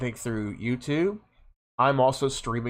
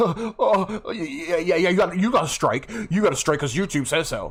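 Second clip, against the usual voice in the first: put-on nervous laughing through words, high, rushed; 6 semitones higher than usual. Recounting what a guy said about a YouTube strike, imitating his nervous laughter. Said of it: "he is nervously laughing on his end. He's like".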